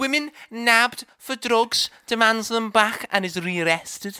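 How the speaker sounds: bad put-on Liverpool accent. Reading out a weird news headline for the show, in a crappy fake liverpool accent. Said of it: "our crappy Liverpoolian accent".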